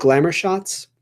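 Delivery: ordinary delivery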